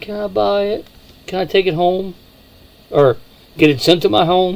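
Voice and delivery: playful, high-pitched, put-on pleading voice. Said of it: "going with puppy dog eyes to my wife".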